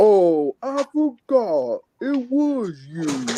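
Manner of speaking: every word dragged out slowly. Showing how a cartoon bear sounds: Brer Bear voice. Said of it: "I'm gonna do a voice act of it".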